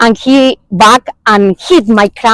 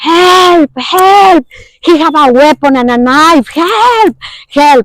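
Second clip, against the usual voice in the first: high, drawn-out cries with "help" stretched long; 6 semitones higher than usual. Retelling being shot at and yelling to the drivers: retelling own yell for help. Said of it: "I'm start yelling to the".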